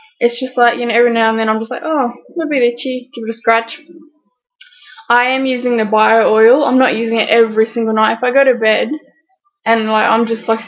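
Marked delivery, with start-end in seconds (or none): none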